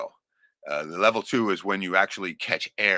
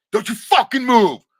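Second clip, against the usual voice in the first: very loud, very high, shrill furious yell; 10 dB louder than usual. Retelling the man's two different voices, imitating his yelling voice. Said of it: "2 different fucking speaking voices entirely".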